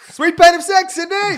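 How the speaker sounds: high, loud shouted call-out. Joking that a listed ad title sounds like someone at a concert: imitating someone at a concert. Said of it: "someone at a concert being like".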